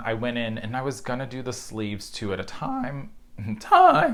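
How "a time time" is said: voice breaks and cracks, very high and loud. Knitter explaining how the sleeves were knit, voice cracking. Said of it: "Voice crack".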